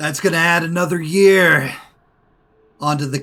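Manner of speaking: big, loud, resounding booming voice. As the miners cringe in pain, a voice booms out at them. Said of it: "a loud voice booms out".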